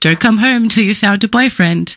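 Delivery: playful, teasing tone. Quoting what a parent would say to her, retelling a playful joke. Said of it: "she would joke".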